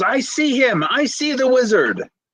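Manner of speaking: shrill shout, pitched very high. Voicing a character spotting the wizard: Kylan yelling. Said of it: "Kylan now yells".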